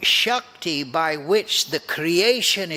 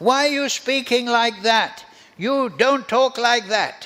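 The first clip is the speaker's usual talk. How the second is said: scolding, chastising tone, pitched up high. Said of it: "they chastise Krishna".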